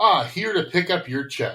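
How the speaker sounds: mock breezy, cheerful tone. Retelling how Craig T. Nelson greets a man they tried to have killed, imitating his cheerful greeting. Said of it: "that was an awfully cheerful greeting".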